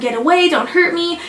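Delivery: put-on, high-pitched screaming. Retelling a scene where a freed woman screams at him; acting out a scream. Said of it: "she's screaming at him".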